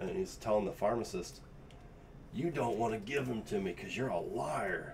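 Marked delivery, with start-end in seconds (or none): 2.3-4.9 put-on voice through gritted teeth. Retelling what an old man told a pharmacist, imitating talking through gritted teeth. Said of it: "talking through gritted teeth".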